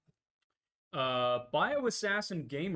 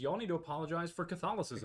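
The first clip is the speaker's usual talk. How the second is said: plain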